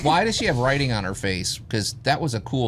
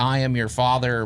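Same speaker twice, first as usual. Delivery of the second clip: normal talking voice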